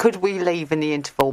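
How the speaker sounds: ordinary delivery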